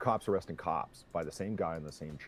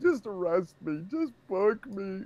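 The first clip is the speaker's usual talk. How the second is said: play-acted sobbing, blubbering, very high and raised; 5 dB louder than usual. Retelling a crying drunk cop begging: imitating blubbering crying. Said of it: "blubbering, crying".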